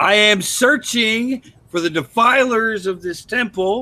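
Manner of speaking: booming in-character yell. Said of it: "Why are you yelling, sir?".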